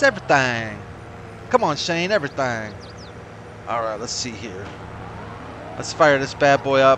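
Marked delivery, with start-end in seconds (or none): 0.0-2.7 put-on southern US accent throughout. Recalling how a man always said one word, southern accent impression. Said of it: "That was his southern accent".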